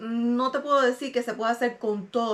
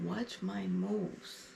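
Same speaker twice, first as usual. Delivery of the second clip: mock mutter, lower and quieter; 4 semitones lower, 11 dB quieter than usual. Retelling what someone said nearby: imitating someone muttering under his breath. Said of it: "I hear him under his breath going".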